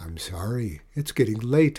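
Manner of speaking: ordinary delivery, nothing marked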